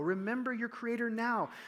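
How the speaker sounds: heavy stress on now with a falling close.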